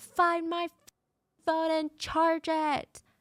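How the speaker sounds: imitated scream. Recounting a couple's fight over her phone, imitating her screaming. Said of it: "And she's screaming".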